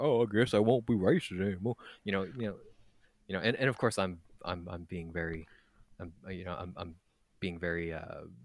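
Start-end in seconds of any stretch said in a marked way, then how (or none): 0.0-1.8 derisive, mocking, dim-witted dumb-guy caricature voice. Imitating the dum-dums reacting to a leader: mocking imitation of dum-dums. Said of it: "the dum-dums out there to be like".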